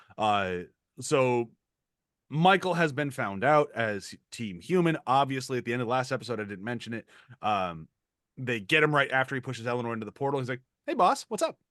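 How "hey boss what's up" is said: very casual, breezy, offhand delivery, very high pitch. Retelling a character greeting his boss: imitating Michael, very casual. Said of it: "Very, like, very casual".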